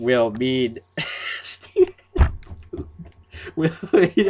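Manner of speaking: talking through laughter. Asking a guest a question while distracted by the chat: laughing while talking. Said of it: "I can't stop laughing".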